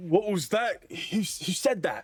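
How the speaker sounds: confused dwarf voice, pitched very high. Game master voicing a dwarf as a player's plan unfolds: confused dwarf voice. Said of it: "this like look of confusion over the dwarf's face".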